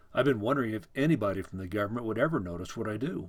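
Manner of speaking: plain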